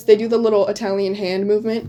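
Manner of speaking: usual speaking voice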